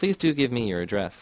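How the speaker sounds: imploring, begging, pleading tone. Mark speaks to Myrna in a story; begging. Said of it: "he begged".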